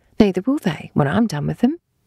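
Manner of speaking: ordinary delivery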